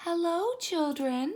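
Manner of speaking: sweet, very high-pitched voice. Reading a story aloud, voicing someone greeting the children in a sweet voice. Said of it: "someone said in a sweet voice".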